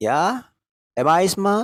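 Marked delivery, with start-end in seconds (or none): 1.0-1.6 questioning tune climbing upward on smart. English lesson on asking questions, rising pitch at end of smart. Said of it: "mengucapkannya dengan nada menaik".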